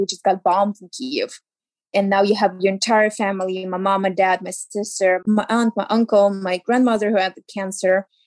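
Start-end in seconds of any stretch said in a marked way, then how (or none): none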